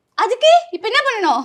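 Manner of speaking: high, sharp, dismissive tone.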